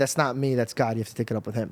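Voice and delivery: ordinary talk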